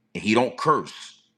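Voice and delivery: plain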